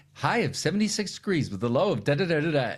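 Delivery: rapid, rattled-off smart-speaker AI assistant style. Retelling a movie scene where the weather is asked: imitating an AI assistant. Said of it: "spits it out just like your A I assistant would".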